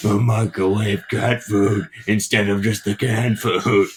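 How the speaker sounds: comic-book vigilante-style superhero groan. Speaker talking in a voice a listener says sounds like Batman, Batman voice. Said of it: "now you just sound like Batman".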